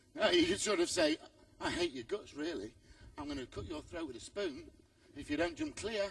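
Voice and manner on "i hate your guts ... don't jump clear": gentle, soft, calming, soothing voice. Showing riders how to talk to a tense horse: soothing tone. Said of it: "As long as you do it in the right tone".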